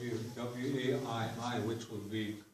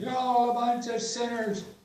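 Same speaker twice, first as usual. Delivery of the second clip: very high, very loud, shrill preacher's yell; 11 semitones higher, 10 dB louder than usual. Retelling a joke about a replacement priest's sermon: imitating a preacher yelling. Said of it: "he started in again".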